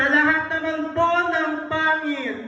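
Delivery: high, stretched-out showbiz host voice.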